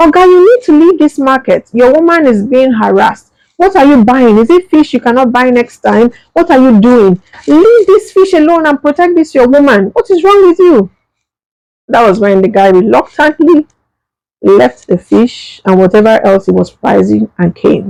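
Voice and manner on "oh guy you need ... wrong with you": high, raised, berating yell. Retelling a man shouting at the speaker's companion in the market; imitating someone shouting. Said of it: "he was shouting at the guy".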